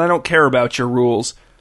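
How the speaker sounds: plain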